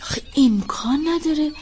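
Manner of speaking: usual speaking voice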